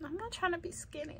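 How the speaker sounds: high, soft, quick.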